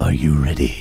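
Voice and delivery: very deep, low movie-trailer announcer voice. Introducing this week's segment to a guest, the speaker uses a movie trailer voice. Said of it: "That's my movie trailer voice".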